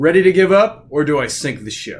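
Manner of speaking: very loud, thunderous, booming voice. A voice in the waves and thunder addresses the ship's crew, booming. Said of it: "she booms out and says".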